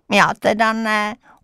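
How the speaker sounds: scornful, derisive sneer. A boy disagrees with a woman praising a popular classmate, sneering. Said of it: "ušklíbil se Franta".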